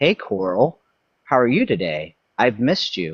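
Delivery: disembodied female AI voice. Retelling what a chatbot persona said to him: imitating a female ai voice. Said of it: "this female voice comes through and it says".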